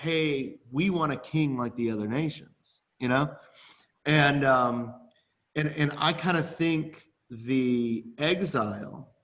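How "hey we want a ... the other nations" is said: ordinary talk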